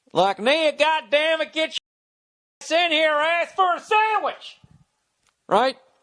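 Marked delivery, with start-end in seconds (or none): 0.4-4.6 very high, slow, drawling put-on southern US accent. Speaker shows how they make fun of rednecks: mocking southern voice. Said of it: "like the way I'll do like a southern voice".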